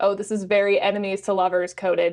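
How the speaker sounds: usual speaking voice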